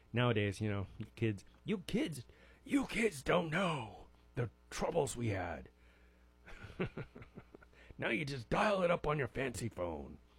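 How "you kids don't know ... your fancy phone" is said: put-on soft, grumbling elderly man voice. Speaker addressing kids after describing taping songs off the radio, old man impression. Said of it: "That was my best impression of an old man".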